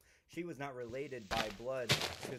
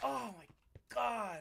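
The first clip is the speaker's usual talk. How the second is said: put-on jealous voice, pitched higher; 11 semitones higher than usual. Imagining a mom upset about her child, in a Jennifer Coolidge voice. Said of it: "why did I sound like Jennifer Coolidge there?".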